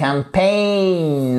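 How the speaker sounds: campaign, stress moved to second syllable -paign. English lesson in French on the word campaign: stress on -paign in campaign. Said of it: "Accent tonique sur la deuxième partie du mot".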